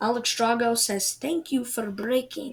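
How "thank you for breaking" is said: put-on Russian-accented delivery. Passing on someone's thanks, speaker speaks in a russian accent. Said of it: "good Russian accent there".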